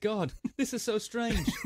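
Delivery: put-on British accent. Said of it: "I don't know why he sounded British".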